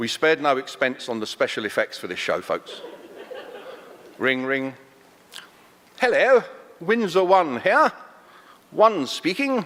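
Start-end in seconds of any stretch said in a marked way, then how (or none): 6.0-9.6 posh voice, pitched up high. Acting out a phone call to Buckingham Palace: imitating the Queen's telephone voice. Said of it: "it's gonna sound something like this".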